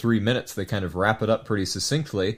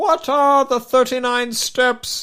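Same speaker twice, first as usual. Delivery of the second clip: very high-pitched shout, said slowly; 5 dB louder than usual. Retelling Hannay shouting out to Mister Memory: shouting like Ian McKellen. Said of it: "that was almost like Ian McKellen".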